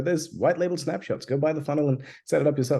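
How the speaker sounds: plain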